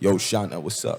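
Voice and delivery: deep-voiced, casual American accent, voice dropped. Showing how the speaker switches when talking to americans: deep american accent. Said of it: "I get the deep voice".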